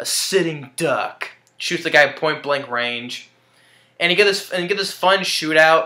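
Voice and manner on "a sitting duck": put-on intimidating movie voice, slower pace. Repeat what he says before he shoots the guy, in Robert Patrick's intimidating voice. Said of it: "the intimidating voice that he had when he says that".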